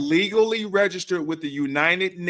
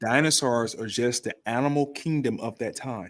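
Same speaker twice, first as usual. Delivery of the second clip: very low, hushed whisper, aside; 7 semitones lower, 5 dB quieter than usual. Speaker explaining something to a doubting listener, whispering. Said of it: "and I'm whispering".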